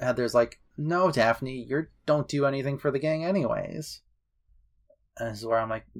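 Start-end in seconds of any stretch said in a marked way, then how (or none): none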